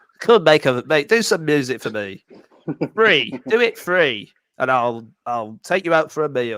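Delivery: slow, drawn-out put-on voice, each word lingered on. Imitating Michael Winner asking people to make music for free: Michael Winner impression. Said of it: "I could never do a Michael Winner impression".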